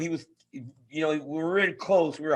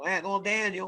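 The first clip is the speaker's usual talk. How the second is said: put-on Oklahoma-sounding accent, spoken quieter; 3 semitones higher, 4 dB quieter than usual. Imitating Andy Foster addressing Daniel: Andy Foster impression. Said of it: "He sounds like he's from the middle of Oklahoma".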